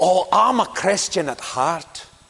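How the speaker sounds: put-on spoken in a Scottish accent. Retelling what a man said on hearing about church services, in a Scottish accent. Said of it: "in a Scottish accent".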